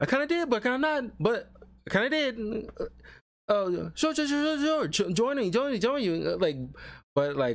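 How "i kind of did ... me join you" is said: very high, squeaky, high-pitched cartoon voice. Imitating the voice actor of Wendy: imitating Wendy's rapid talking. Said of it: "he talks very rapidly".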